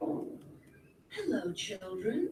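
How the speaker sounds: sweet voice, sweetly spoken. Reading a children's story, a character greets the children in a sweet voice. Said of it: "someone said in a sweet voice".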